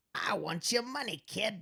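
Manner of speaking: put-on old-timey, 1920s-style sleazy slimeball voice. Joking about a sleazy-looking character's picture: 1920s-style sleazy voice. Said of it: "Nineteen twenties".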